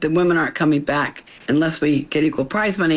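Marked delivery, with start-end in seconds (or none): none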